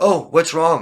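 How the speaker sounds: very loud, high-pitched, sarcastic show of sympathy. Speaker retells how their dad smiles sarcastically at them, imitating dad's sarcastic concern. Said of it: "smiles at me sarcastically and says".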